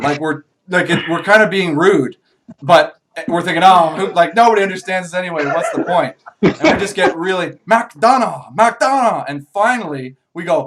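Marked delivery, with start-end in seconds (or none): 7.7-9.2 high, over-the-top, hammed-up put-on Chinese accent. Retelling asking strangers the way to McDonald's: hammed-up Chinese accent. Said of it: "really hamming it up with the Chinese accent".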